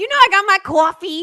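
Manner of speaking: put-on New York accent. Doing a morning shout-out bit, in a put-on new york accent. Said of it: "that was my New York accent".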